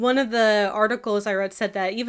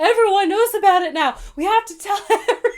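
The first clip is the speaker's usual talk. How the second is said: pretend gleeful excited shriek, higher and louder; 10 semitones higher, 4 dB louder than usual. Imagining reading the published journal gossip with a friend: mock gleeful shrieking. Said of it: "the gleeful shrieks that we would emit".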